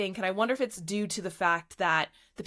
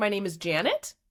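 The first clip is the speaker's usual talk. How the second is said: Canadian upspeak with question-like rising tune. The speaker demonstrates the canadian upspeak they were told to get rid of: canadian upspeak. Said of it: "your Canadian upspeak".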